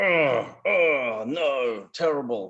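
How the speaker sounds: put-upon, exasperated groan over the words. Explaining groaning with an example of finding the supermarket closed, groaning. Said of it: "So that's groaning".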